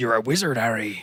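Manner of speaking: layered, multi-toned voice built in stacked layers. Showing how a Hagrid impression should sound: layered Hagrid voice. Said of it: "add multiple layers to the voice".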